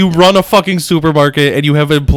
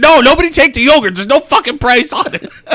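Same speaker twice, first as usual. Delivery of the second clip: mock high-pitched yelling; 10 semitones higher than usual. Retelling a game player yelling at people working for him; imitating someone yelling. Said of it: "he's like yelling at these people".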